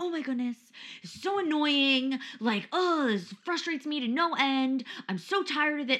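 high-pitched, fed-up ranting. Telling two listeners about a forgotten card, the speaker reenacts a past rant: retelling going off, ranting. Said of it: "Like going off".

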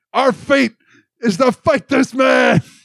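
very high, dramatic, over-the-top screaming. Recapping a show, the speaker quotes a scene, imitating Joseph screaming. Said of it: "And then he like screams".

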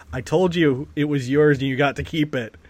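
ordinary delivery

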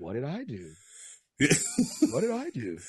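low character voice with swooping, swinging pitch. Describing how Sheldon reacts when he is scolded: Sheldon impression. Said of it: "you already got the Sheldon impression down".

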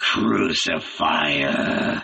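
low, furious, angry growl. Answering the youth, the other man growls angrily. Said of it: "growled the other, angrily stamping his heel".

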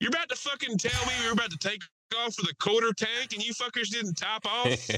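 shrill, very high-pitched jeering voice. Retelling how a guy on the plane heckled the stewardesses and pilot, retelling his jeering. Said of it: "he's just heckling the stewardesses".

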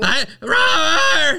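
play-acted very high, loud cry of pain. Retelling how the partner yelled after getting stung: imitating someone yelling in pain. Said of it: "the way you were".

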